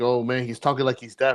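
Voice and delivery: ordinary talk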